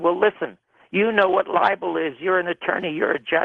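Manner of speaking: plain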